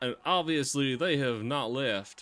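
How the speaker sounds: put-on preacher voice. Repeating a speaker's words to mock them: imitating a put-on pastor accent. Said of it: "is he putting on a pastor accent?".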